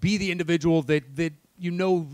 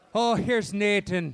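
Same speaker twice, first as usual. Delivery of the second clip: bad put-on Irish accent; 4 semitones higher than usual. Reacting to a man's name, in a bad stereotypical irish accent. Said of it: "I'm doing a bad, like, stereotypical Irish".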